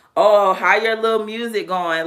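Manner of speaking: mock teasing in a light, joking, shady tone. Imitating a jealous person joking about a new business: imitating a shady joking jab. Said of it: "they'll try to say it in a little joking way".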